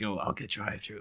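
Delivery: put-on raspy superhero voice. Retelling an earlier Batman line in a raspy Batman voice. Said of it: "he had a kind of raspiness to him".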